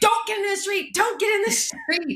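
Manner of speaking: acted, very high-pitched, loud yell. Speaker retells warning a squirrel off the street, retelling a yell. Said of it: "I'm yelling".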